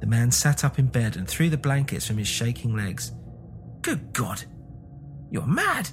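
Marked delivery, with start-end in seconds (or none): 3.8-5.9 very high, swooping cry of horror. Narrator reading a story voices the man in bed answering his wife: cried with horror. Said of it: "he cried, struck with horror".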